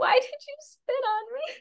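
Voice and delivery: put-on tiny child's voice, very high. Retelling a story, quoting a voice from the kids below the bridge, in a little kid's voice. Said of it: "like this little voice go".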